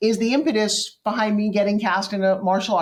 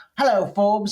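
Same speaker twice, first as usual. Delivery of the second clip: put-on Australian accent. Retelling a call from a co-star after a reading: Richard Norton impression. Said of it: "'cause Richard talks like this".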